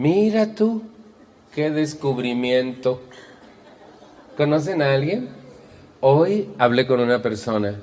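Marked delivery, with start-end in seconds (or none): 0.0-3.0 mock, heavy, scornful, sarcastic teasing tone. Retelling own reaction to a discovery: acting out own mocking tone. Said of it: "mi tono era burlón, muy burlón".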